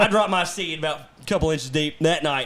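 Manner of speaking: plain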